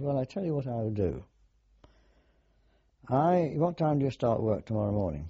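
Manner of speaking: normal talking voice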